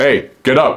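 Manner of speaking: put-on manly voice. Acting out a mom waking her kid, in a manly voice. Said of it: "I don't know why I said that in a manly voice".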